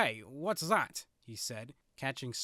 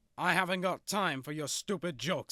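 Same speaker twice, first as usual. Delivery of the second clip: short, irritable, snapping tone; 4 semitones higher, 4 dB louder than usual. Reading a story aloud, a character answering a joke: snapping. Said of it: "snapped O J".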